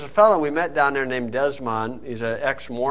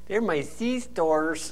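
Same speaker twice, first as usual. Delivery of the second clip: put-on Spanish accent; 4 semitones higher, 5 dB quieter than usual. Retelling how a woman answered police officers, in a put-on Spanish accent. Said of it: "Jen got her Spanish accent".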